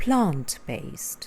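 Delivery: plant-based with stress on plant. Teaching stress in two-word adjectives: stress on plant in plant-based. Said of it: "you put the stress on the first word of the two word adjectives".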